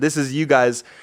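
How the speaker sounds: plain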